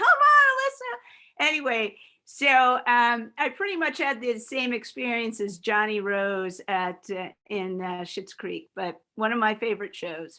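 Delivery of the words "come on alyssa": play-acted high, shrill, loud screaming. Retelling how her friends screamed at her, imitating friends screaming. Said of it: "all my friends were kind of screaming at me".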